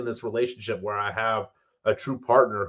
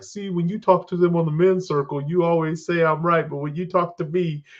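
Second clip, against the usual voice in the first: put-on, high-pitched puppet voice; 6 semitones higher than usual. Imitating a wife pointing out a double standard: Bert and Ernie voice. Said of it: "I always give her the Bert and Ernie voice".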